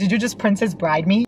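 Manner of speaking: normal talking voice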